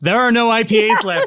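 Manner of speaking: loud yell, called out. Retelling a man's announcement to everyone in line: imitating a man yelling. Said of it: "I'm glad he yelled it".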